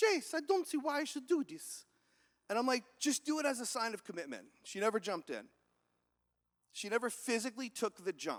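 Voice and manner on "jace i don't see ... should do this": butchered, bad Russian accent, pitched up. Retelling Olga's answer when told to jump into the icy river, imitating Olga's Russian accent. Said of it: "Olga has this beautiful Russian accent. I'm going to butcher it".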